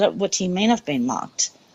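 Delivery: ordinary delivery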